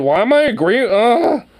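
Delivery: high, loud, exasperated groan of disbelief.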